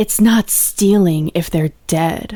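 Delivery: deep, low, sexy, seductive delivery. Trying out a line for the others, in a deep, sexy voice. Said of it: "I'll try to do a deep, sexy voice".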